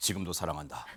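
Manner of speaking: very soft, hushed put-on voice. Talking about a reunion shown on a broadcast, imitating someone's voice. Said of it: "목소리 좀 비슷했나요?".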